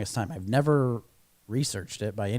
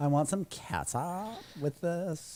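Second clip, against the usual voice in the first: put-on valley girl voice, much higher, quieter; 5 semitones higher, 7 dB quieter than usual. Joking about the word catsup by asking for some: valley girl voice. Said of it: "kind of sounded like a Valley Girl".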